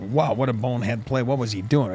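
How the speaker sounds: usual speaking voice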